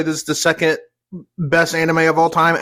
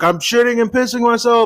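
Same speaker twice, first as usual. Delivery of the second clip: put-on, high-pitched, screamed-out outburst; 6 semitones higher than usual. Retelling what a character screamed at a nurse: imitating someone screaming. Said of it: "he was literally screaming".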